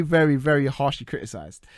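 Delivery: ordinary delivery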